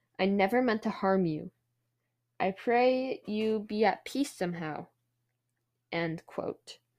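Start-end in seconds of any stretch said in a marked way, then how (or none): none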